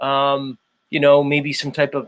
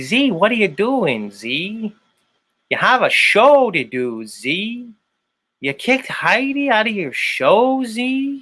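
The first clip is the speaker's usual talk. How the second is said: put-on Chicago accent, laid on, high and swooping; 7 semitones higher than usual. Show host, after teasing goofy accents, tries one himself: attempted Chicago accent. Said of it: "That was my Chicago uh, accent".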